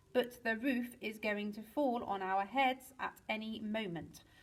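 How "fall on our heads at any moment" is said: ordinary delivery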